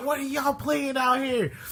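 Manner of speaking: irate mother voice, pitched very high. Retelling a mom overhearing a video game, imitating an angry mom. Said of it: "She's like".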